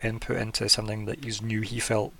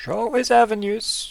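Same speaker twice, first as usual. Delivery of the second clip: spooky game character voice. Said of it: "he says, like, kinda spookily".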